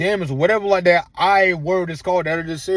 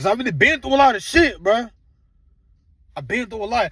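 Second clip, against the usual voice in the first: voice lifted with passion; 3 semitones higher than usual. Speaker explains his wish to help people, in a raised, passionate voice. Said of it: "I'm sorry, like I'm raising my voice".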